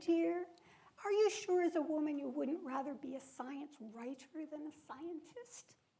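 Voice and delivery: gentlest, kindest, sweet kindly voice. Recalling what her college advisor asked her at seventeen, imitating his kindest tone. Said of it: "he said to me in the kindest tone".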